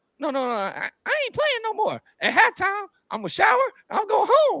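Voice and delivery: put-on high-pitched voice. Retelling how a player told the coach he was quitting, imitating a high-pitched voice. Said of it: "he talks real like high pitch".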